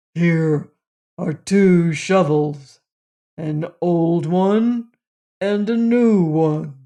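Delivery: brusque, surly, gruff storybook giant voice. Reading a story aloud, voicing the giant speaking to the Prince, gruff. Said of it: "said the giant gruffly".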